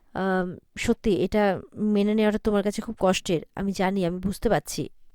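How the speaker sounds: ordinary delivery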